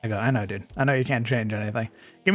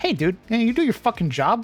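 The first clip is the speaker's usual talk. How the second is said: curt, rude, snippy, very high pitch; 12 semitones higher, 3 dB louder than usual. Retelling snapping at a manager on the phone: retelling own snippy tone. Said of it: "The only time I got snippy".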